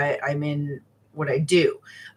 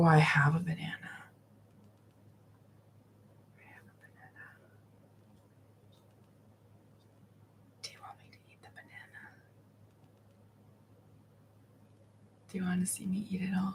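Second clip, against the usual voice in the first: very quiet, whispery, breathy, trance-like ASMR voice; 4 semitones higher, 13 dB quieter than usual. Practicing an ASMR bit on YouTube, hypnotic ASMR voice. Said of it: "some almost like hypnotic ASMR".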